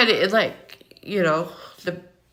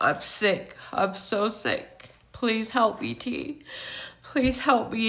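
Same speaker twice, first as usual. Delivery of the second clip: acted, tearful, desperate begging; 4 semitones higher, 6 dB quieter than usual. Retelling how a crying man on his knees begged for help: imitating someone begging while crying. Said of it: "And he's begging me".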